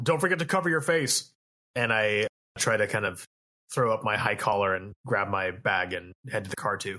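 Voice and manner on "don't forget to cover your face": raised, pitched-up yell. A player's character yells to Foxtrot running past, yelling. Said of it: "I yell".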